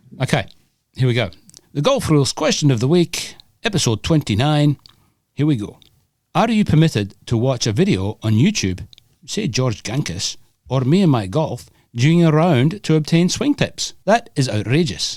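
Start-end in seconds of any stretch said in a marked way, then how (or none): 1.8-14.0 put-on Scottish accent, pitched up. Reading the weekly golf rules question aloud, in a scottish accent. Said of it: "are you going to do it in Scottish?".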